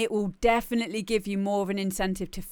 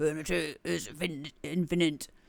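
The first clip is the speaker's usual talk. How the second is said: low, mechanical robot voice; 4 semitones lower, 4 dB quieter than usual. Repeating a phrase that sounds cool, the speaker tries it in a robot voice. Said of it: "it's me trying to do in a robot voice".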